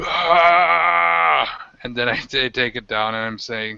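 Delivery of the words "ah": high, rough, drawn-out battle roar, long ragged "ah". Lifting a werewolf head on a sword to kneeling hobgoblins: roaring yell. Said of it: "I just start yelling, roaring like".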